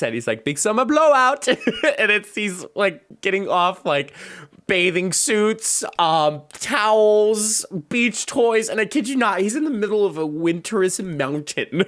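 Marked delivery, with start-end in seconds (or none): 0.4-1.5 put-on Scandinavian accent, much higher. Retelling a movie scene where a Scandinavian guy greets a character, in Oaken's Scandinavian accent. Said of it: "so he has the accent".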